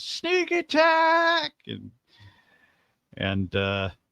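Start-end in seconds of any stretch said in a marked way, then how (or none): 0.0-1.5 shrill, very high screamed cry. Voicing an NPC who sneaks up behind a player: screaming NPC. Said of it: "just screams".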